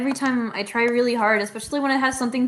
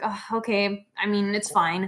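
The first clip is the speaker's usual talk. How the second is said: put-on slow, drawn-out, dismissive, grudgingly unimpressed scoff. Retelling how she reacted to a turned-in project: imitating her scoffing. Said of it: "she, like, scoffed".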